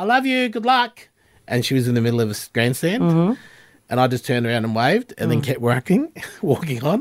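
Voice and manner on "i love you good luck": put-on, very high yelled call. Retelling mum yelling from the grandstand as they ran onto the field, yelling out. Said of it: "mum yelling out".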